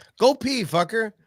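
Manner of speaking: sudden shouted yell. Telling another speaker to go pee: yelling. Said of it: "Why are you yelling at people?".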